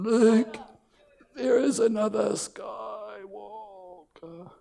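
croaky, wise-sounding alien voice. Like a tiny ancient sage croaking out a solemn revelation in an odd, upside-down way of speaking.

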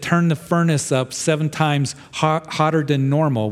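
normal talking voice

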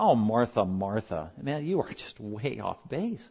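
acted, mild, lighthearted scolding tone, soft, low, slow. Acting out how he gently corrects Martha, imitating a gentle lighthearted rebuke. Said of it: "and he's being gentle about it".

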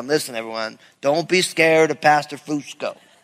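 put-on Southern drawl. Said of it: "He's got a nice southern drawl".

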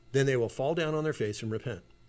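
ordinary talk

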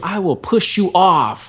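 high, drawn-out drill sergeant screaming. Retelling what a drill sergeant at the top screamed: imitating a drill sergeant screaming. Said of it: "he just screams at you".

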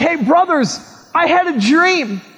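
eager, excited, bragging show-off tone. Retelling a story, a speaker acts out a young man telling his brothers, imitating excited bragging. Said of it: "And he gets all excited".

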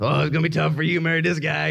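pitying, sympathetic woman's voice. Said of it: "She's like".

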